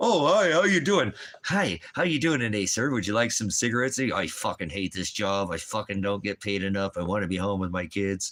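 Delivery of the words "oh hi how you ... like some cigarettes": pitched-up, fake-friendly customer-service cheer. Explaining why he couldn't act for a job, acting out greeting a customer: fake friendly greeting. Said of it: "put on the dummy mask, act be an actor".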